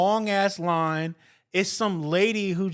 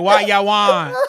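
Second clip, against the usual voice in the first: loud put-on Jamaican accent; 10 dB louder than usual. Imitating a mean lady at the Subway counter: imitating a Jamaican accent. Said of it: "I was going for Jamaican".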